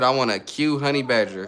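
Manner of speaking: ordinary talk, nothing marked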